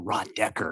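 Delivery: hushed whisper. Recalling getting to report next to someone they watched, whispered. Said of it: "you say that in a whisper".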